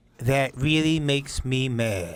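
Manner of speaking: slow, stretched cartoon hound voice. Asked to hear their one voice, the speaker does a Droopy Dog voice. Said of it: "I do one voice. It's Droopy Dog".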